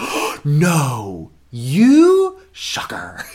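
put-on very slow, loud, drawn-out teasing sarcasm. Recalling mentioning musical theater at dinner, imitating his mock-sarcastic reaction. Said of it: "you're being sarcastic".

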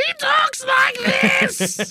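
very high, zany, wacky cartoon voice. Saying the villain should have committed to being a wild Toon: Judge Doom as a wild Toon. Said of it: "committed to being the wild Toon".

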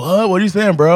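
mock easygoing, lazy stoner-ish surfer drawl. Like a mellow beach guy who wants to understand what the fuss is about and sees no reason to hurry or get upset. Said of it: "it sounded like a surfer dude".

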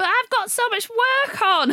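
whiny voice, very high and very slow. Retelling a film scene where she says she's leaving: imitating Pierce Brosnan whining. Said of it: "he's very whiny".

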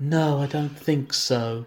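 mock emotionless delivery. Acting out his reply when asked to get back together, mock flat emotionless delivery. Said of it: "you put too much inflection".

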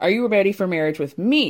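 ordinary talk, nothing marked

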